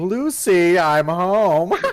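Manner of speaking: loud, shrill, unhinged, maniacal cackling laugh. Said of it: "cackle laugh".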